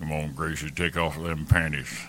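movie cowboy style line delivery. Quoting an actor's show lines: Sam Elliott impression. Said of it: "Trying to do my Sam Elliott impression".

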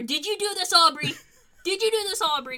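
high-pitched, frantic, freaked-out yelling. Retell Kenny freaking out at Aubrey, imitating Kenny Omega yelling. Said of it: "He's yelling at Aubrey".

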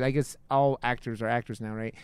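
normal talking voice

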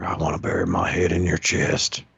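hushed, put-on whisper under the breath. Acting out a joke line to someone being helped dry off: acting out a whisper. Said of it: "you just wanna whisper".

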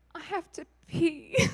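high, slow, tearful speech through crying. Retelling a woman's words after being prayed for, imitating her crying. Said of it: "she's like crying".

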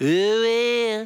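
"oh well" with attitude, "well" drawn out. Speaker leads the audience in repeating a phrase, with a little attitude. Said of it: "would you say it with me with a little attitude".

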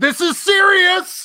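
mock shout. Co-host names a favorite shout from a film scene, imitating someone shouting. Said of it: "my favorite shout is".

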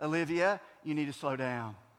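calm, low, soft, steady fatherly tone. Retelling how he warned Olivia, driving behind a braking semi, in a calm, fatherly voice. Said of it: "in my calm, fatherly voice".

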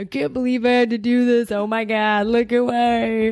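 mocking voice, drawn out. Acting out how the other speaker would react: butthead voice imitating someone. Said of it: "if you use my butthead voice".

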